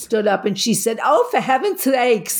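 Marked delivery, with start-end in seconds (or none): 1.0-2.4 put-on New York accent, higher. Retelling what a woman said when she stood up, in a New York accent. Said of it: "with a real New York accent".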